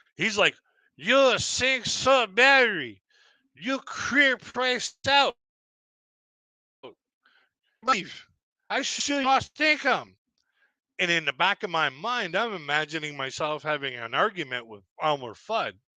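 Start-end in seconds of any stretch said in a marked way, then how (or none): 1.0-10.2 play-acted shrill, very high, broken-English yelling rant. Retelling a man who grabbed his mic and yelled at him, imitating someone yelling. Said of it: "he's yelling at me".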